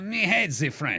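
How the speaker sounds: put-on French accent gradually creeping into the speech. Acting out Jonas answering whether he speaks French, slipping into a French accent. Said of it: "I fell into French again".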